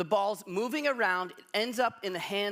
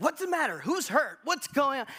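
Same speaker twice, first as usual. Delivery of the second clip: irritated, annoyed, pitched-up demanding voice; 6 semitones higher than usual. Retelling a wife running out of the bedroom late at night: imitating an annoyed wife. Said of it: "She was annoyed".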